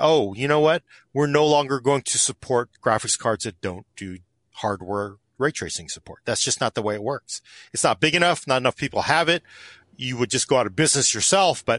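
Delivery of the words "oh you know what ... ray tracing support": ordinary delivery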